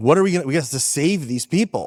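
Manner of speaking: put-on panicky, urgent voice. Recalling pleading with dad as a six-year-old in New York, reenacting being frantic. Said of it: "I was like frantic".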